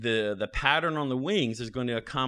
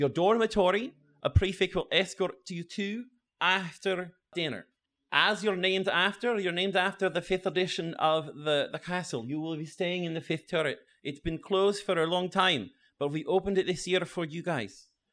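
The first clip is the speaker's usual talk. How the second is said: put-on Scottish accent, pitched a bit higher; 7 semitones higher than usual. Professor Walters addresses the transfer students, in an attempted Scottish accent. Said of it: "the Scottish one talking in the front. Yeah. Like, I'm trying to do a Scottish accent talking in the front. ... I'm trying to do a Scottish accent talking in the front".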